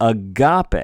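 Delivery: agape with the weight on the ga syllable. Showing how to stress the word agape, stress on ga in agape. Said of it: "We're trying to put a little more oomph on the ga".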